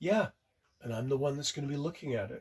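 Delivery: put-on deadly calm, level, dangerously calm delivery. Retelling a wife's answer after her partner puts his foot down: retelling a dangerously calm reply. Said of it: "in a rather dangerously calm voice".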